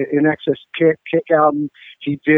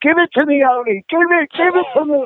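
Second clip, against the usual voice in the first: put-on scream, British accent, much higher pitch; 12 semitones higher than usual. Recalling a woman on a ladder with a camera screaming at oni, retelling a scream. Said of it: "screaming at Oni in this British accent".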